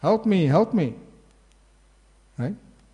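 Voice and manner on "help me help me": put-on high, raised, pleading shout. Describing old movies, acting out the captured woman tied on the tracks: retelling a shout for help. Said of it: "And she's shouting".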